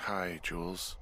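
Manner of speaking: weary, sleepy-sounding. Just got out of bed, answering the radio to greet Jules, tired. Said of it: "you sound tired".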